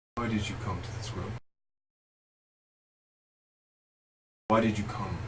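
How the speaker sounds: deep, echoing, resonating voice. A telepathic voice calls down to the listeners, in a deep echoey voice. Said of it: "calls down to you in this deep, echoey voice".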